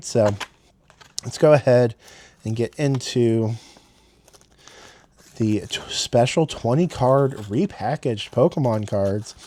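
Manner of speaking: upbeat hype with a sarcastic edge. Starting to open a pack of repackaged cards: enthusiastic and sarcastic at once. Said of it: "Can I be enthusiastic and sarcastic".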